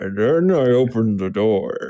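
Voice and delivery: put-on slow, rambling, tipsy old man voice. Mimicking how a man on a recording sounds, in a tipsy grandpa voice. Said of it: "he sounds like Grandpa on on his fifth eggnog, just going".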